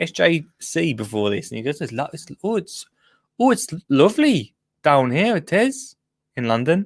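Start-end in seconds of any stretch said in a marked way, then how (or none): 1.8-6.9 put-on Welsh accent with false starts, halting. Retelling what SJC said when they talked before the show, Welsh accent. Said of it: "That was that was a Welsh accent".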